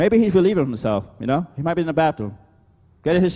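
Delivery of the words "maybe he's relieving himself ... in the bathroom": sarcastic, mocking tone. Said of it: "and he's mocking them".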